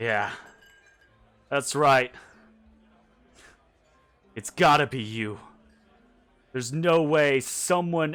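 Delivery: put-on slurred drunken speech. Narrator voicing a man who walks up to the listeners in a tavern, drunk. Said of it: "clearly drunk this early in the morning".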